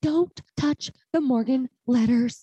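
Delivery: high, slow, loud, drawn-out pleading tone. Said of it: "Sonia Morgan quote when she was like".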